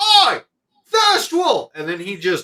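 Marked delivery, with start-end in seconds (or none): 0.0-1.7 loud, very high holler with swooping pitch. Narrating a character who bangs on a door and calls out, yelling. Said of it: "he bangs on it and he yells".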